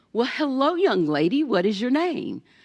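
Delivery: sweet, high-pitched, welcoming voice. Speaker retells Miss Pam Jones greeting her at school registration, imitating Miss Pam Jones's sweet voice. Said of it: "with that sweet voice".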